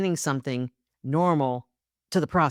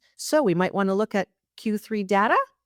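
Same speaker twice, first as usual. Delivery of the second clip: upspeak, final word "data" rising like a question; 5 semitones higher than usual. Demonstrating the upward inflection by stating a sentence as a question. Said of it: "that upward inflection".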